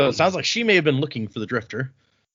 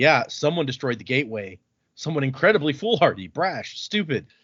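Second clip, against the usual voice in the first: plain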